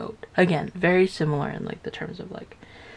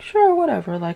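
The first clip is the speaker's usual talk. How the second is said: high, casual, easygoing ox voice. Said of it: "the ox was very like".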